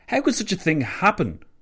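high-pitched, stunned, incredulous disbelief. Narrator reads a listener's reaction to grave news, incredulous question. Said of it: "Louis Botha asked incredulously".

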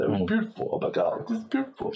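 very high blubbering, tearful sob-talk, acted out. Retelling how a tough chairman reacted, imitating someone crying. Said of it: "the hard as ass chairman is like crying".

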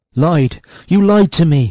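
loud, high-pitched words gasped out in shock. Watkin, after the men unlace and show glowing green rings, to one of them: gasped. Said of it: "gasped Watkin".

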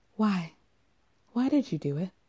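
soft, hushed half-whisper under the breath, stage whisper. Retelling a tell-all moment, quoting a question: imitating a half-whisper. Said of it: "And then she whispers".

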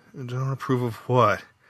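sleepy mumbling, just waking up. A man woken by a woman in the night asks back, muttered. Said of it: "Frank muttered".

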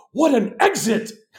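play-acted shrill yell, pitched way up. Telling how someone yelled out as he walked out, retelling a loud yell. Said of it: "literally yells out loud".

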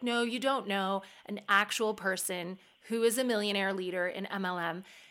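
plain

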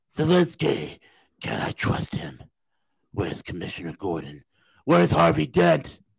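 gruff, creaky voice with swooping pitch.

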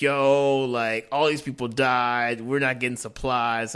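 usual speaking voice

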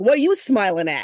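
put-on Long Island accent. An author repeats a reader's message about the author picture, in a thick Long Island accent. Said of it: "like in a thick Long Island accent".

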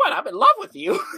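very high voice, giggling through the words. Describing a scene, retelling what she says, imitating her laughing. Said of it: "laughing and going".

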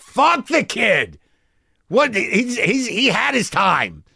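high, very slow, drawn-out hollering yell. In a scene where others urge listening to the kid, one character: yelling. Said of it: "Why is that guy always yelling?".

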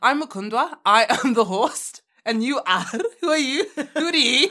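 loud, high-pitched put-on Scottish accent. A podcast host showing the co-host what scottish sounds like, scottish accent. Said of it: "I'll show you Scottish".

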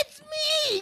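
mock outraged, very high, wide protesting shout.

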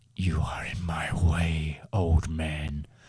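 low, slow, deep, hissing villain voice. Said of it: "Always got an interesting voice".

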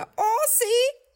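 mock, eager, high, loud, chirpy "si".

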